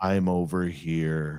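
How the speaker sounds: dead-level, flat, low monotone, drawn out. Telling a forest story, the speaker recreates a distant woman's voice: extremely monotone. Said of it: "it was extremely monotone".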